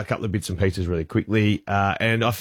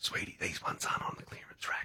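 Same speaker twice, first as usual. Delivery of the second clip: hushed whispered aside, very soft, barely audible. Retelling what a woman in a store line whispered to the speaker: retelling a whisper. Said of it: "she whispers".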